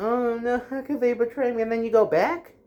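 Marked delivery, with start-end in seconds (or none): 0.0-1.6 fake tearful sobbing, crying voice. Mocking someone crying after being cheated on: mock crying. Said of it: "I never got the idea of crying".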